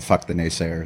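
ordinary talk

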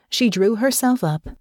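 plain reading voice

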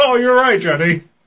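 very high, garbled, muffled talk through a full mouth. Acting out his own reply to his wife: pretend muffled mouth-full voice. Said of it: "That's how I talk when I have a dick in my mouth".

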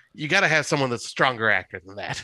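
ordinary delivery

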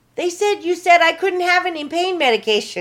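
mock very high, loud, upset yelling, almost crying. Retelling the mother's phone call: imitating her yelling, almost crying. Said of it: "yelling at me".

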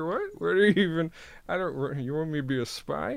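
stumbling, garbled words through a stuffed mouth. Doing a requested impression from Confessions of a Dangerous Mind: Sam Rockwell impression. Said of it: "He's just got a mouthful of food".

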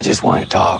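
low, gruff put-on voice.

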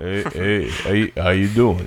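very low, rumbling bass voice at bottom of range. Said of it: "use Vin Diesel's voice".

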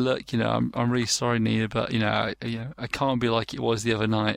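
usual speaking voice

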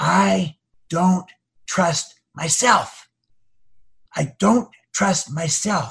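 very slow, drawn-out, leaning-in half-whisper. Retelling how a man leaned in and confided: imitating someone half-whispering. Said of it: "leaned in and whispered to me".

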